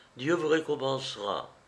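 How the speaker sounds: usual speaking voice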